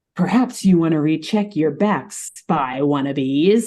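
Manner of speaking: very energetic, lively, slightly off-kilter, unstable-sounding voice. Speaker voicing a character who addresses the spy wannabes, energetic, somewhat unstable voice. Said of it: "in this very energetic and somewhat unstable sounding kind of voice".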